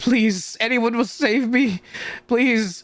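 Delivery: tearful, sobbing, begging cry. Voicing a character who is crying out for help, crying and pleading. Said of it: "but also crying and saying".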